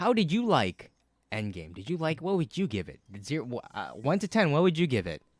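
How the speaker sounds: annoying, loud, high voice. Asking another speaker to rate a movie, in the most annoying voice. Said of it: "I'll talk as in the most, like, annoying voice".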